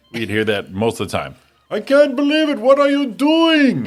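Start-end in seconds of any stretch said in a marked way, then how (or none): 1.7-3.8 very high, loud, put-on foreign accent. Retelling how a foreign salesman neighbor sounded: imitating a foreign neighbor's voice. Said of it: "he had the, the voice like".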